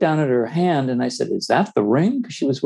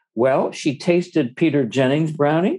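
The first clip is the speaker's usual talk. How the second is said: usual speaking voice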